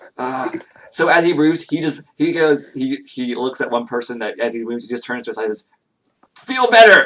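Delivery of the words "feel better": very loud, high, booming shout. Voicing a healer passing a wounded person: very loud command. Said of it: "but just very loud".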